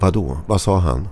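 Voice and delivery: ordinary talk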